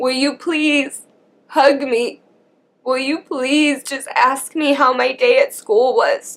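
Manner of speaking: put-on crying, tearful, desperate pleading. Recalling herself at ten, act out tearful begging. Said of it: "I'm crying my eyes out, just begging her".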